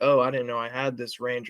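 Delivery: ordinary delivery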